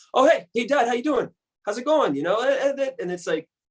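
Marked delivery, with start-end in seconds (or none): 0.1-2.1 voice pitched slightly higher than usual. Showing how the voice goes when talking to one's dad: imitating own higher voice to dad. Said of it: "I always go a little higher when I'm talking to my dad".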